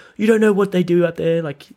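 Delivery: mock defensive, complaining tone. Retelling what a character says in the car: imitating defensive complaining.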